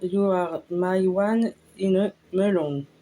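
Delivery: English spoken with a French accent. Presenting a face mask, the speaker reads out the English brand name: French-accented English. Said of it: "excusez-moi pour l'accent anglais".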